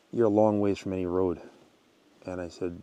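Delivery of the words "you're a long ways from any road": usual speaking voice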